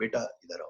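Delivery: put-on very feeble, faint, soft elderly voice. Retelling how an old woman called out from behind: imitating a very feeble voice. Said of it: "I heard a very feeble voice from behind".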